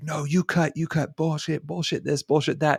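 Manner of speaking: imitated shouting. Retelling how a man in line yelled at the employee, retelling a shout. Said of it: "he's just shouting in her face".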